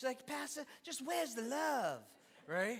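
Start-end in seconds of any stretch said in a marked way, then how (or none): 0.3-2.0 distinctive, very high-pitched voice. Retell what she kept asking you, her pastor, in your best Miss K impersonation. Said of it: "That was my best Miss K impersonation".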